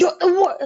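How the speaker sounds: sweet, cute little puppy-dog voice. Retelling how someone says something mean, puppy-dog voice. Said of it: "doing like a puppy dog voice".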